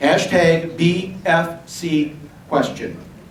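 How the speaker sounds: very slow, careful, deliberate spelling-out. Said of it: "The word question, not the question mark".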